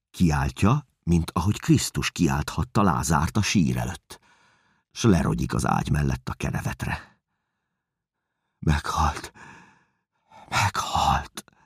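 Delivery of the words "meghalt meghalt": hushed, stunned, frozen whisper, struck with shock. Gathered around the bed, the onlookers whisper in stunned shock. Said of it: "Susogják eldermedten körülöttem".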